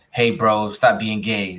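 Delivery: ordinary talk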